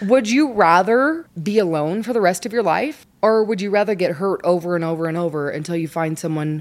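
put-on patronising, condescending, talking-down tone. Re-enacting what they told her, speaker replays their very condescending tone. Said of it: "And I told her in my very condescending tone".

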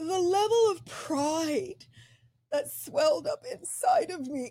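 tearful speech, crying through the words. Speaker addresses the other speaker about their book, crying while talking. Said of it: "I am seriously crying".

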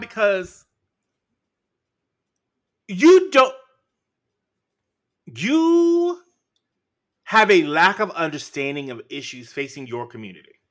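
furious. Criticizing a public figure's lack of understanding, angry. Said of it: "I am so angry right now".

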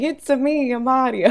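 slow, drawn-out, bad fake Italian accent. Speaker picturing Chris Pratt's casual movie dialogue, in a not-great fake Italian Mario accent. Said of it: "not great fake Italian accent".

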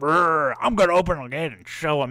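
loud, provoked, riled-up voice. Retelling how the taunted guard reacts: imitating a provoked guard. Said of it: "the guard's like".

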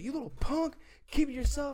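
very high-pitched, shrill yell. Retelling how a man without a mask yelled: imitating a man yelling. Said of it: "yelling at you".

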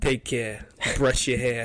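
put-on strong, thick New York accent. Quoting the food reviewer's sign-off line: Kujini's deep New York accent. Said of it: "every time he ends a video, he goes".

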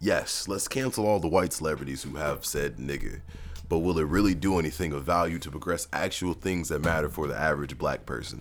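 ordinary delivery

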